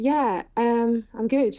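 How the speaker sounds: sounding a bit down, low-spirited. Replying in a conversation just before hearing bad news: sounding down. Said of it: "You sound like you're a bit down".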